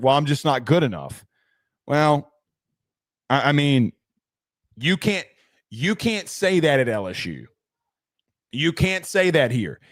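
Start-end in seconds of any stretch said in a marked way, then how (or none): 0.0-1.2 play-acted cheeky, smart-ass, throwaway delivery. Retelling a coach's press conference answer: imitating Eli's smart-ass reply. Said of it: "he said something smart ass like".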